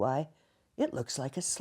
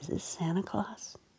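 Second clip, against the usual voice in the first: put-on tiny, hushed, breathy, whispered little-kid voice; 4 semitones higher, 5 dB quieter than usual. Retelling a call from a child: imitating a small child's voice. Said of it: "this little voice says".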